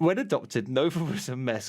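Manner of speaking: talking with words broken by laughter. Answering a question about nova's story, laughing while talking. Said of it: "I'm also sorry I'm laughing".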